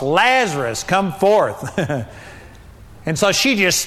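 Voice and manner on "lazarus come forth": loud, commanding, authoritative shout. Retelling a Bible story, acting out a loud yell to a dead man. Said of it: "Jesus yelled with a loud voice".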